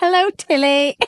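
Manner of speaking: put-on booming, very loud British accent. Speaker describes a filter video where a boss talks, imitating a British guy. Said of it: "it's like this British guy".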